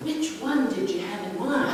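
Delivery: soft, timid, hesitant voice.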